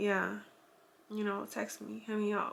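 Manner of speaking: put-on seductive voice. Retelling a goodbye to someone just met, the speaker puts on a seductive voice. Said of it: "I'm doing my seduce my seductive".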